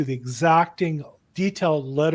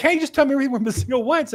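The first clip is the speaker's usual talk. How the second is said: very high-pitched, loud scream; 10 semitones higher than usual. Retelling what the opposing real estate agent screamed: imitating someone screaming. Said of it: "he just was screaming".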